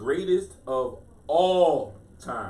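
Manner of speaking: heavy, hard emphasis on the word all. Spelling out what the GOAT acronym stands for, with stress on all. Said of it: "Notice I put the emphasis on all".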